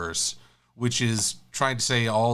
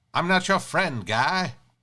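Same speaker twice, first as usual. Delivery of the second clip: high cartoonish Canadian accent; 6 semitones higher than usual. Saying an email's opening sounded like a South Park Canadian, then doing that accent. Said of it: "sounded more like a South Park Canadian".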